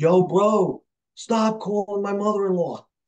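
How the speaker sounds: put-on heavy, thick Bronx accent, loud and high. Retelling what a caller from the Bronx said to him, heavy Bronx accent. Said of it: "He had a heavy accent".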